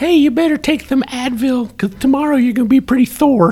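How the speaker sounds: weak, thin, very high put-on voice. Telling a joke punchline to the others: weak Mike Tyson impression. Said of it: "That was a pretty weak Mike Tyson".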